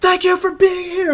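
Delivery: mock yell, very high pitched and slow.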